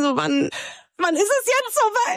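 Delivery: high, eager, impatient.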